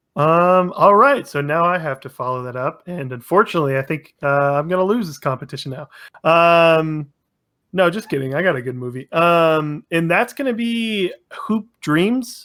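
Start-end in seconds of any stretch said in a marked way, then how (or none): 9.9-12.4 rising, question-like tune on Hoop Dreams. Naming a movie pick in a competition: rising question intonation. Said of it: "you said it with a question mark".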